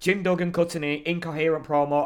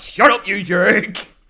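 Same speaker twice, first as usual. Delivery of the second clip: very loud, high-pitched shout; 5 semitones higher, 8 dB louder than usual. Retelling how a wrestler shouted back at a booing fan: retelling a shout. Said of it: "he just shouts".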